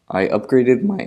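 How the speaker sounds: loud voice, breaking and cracking. Talking to viewers soon after waking up, voice cracking. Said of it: "that voice crack again".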